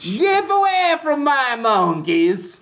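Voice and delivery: put-on clumsy Italian accent, French tinge. Retelling a scene and doing a man's line, bad Italian accent. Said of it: "almost more of a bad Italian accent than a bad French accent".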